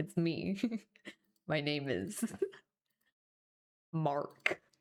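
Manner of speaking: put-on low voice. On stream, introducing himself in a put-on lowered voice. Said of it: "If I try and make my voice go any lower".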